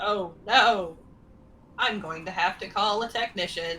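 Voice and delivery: disappointed, let-down robot voice. Voicing a medicine robot whose scan machine just broke: disappointed medicine robot. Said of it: "the medicine robot looks very disappointed".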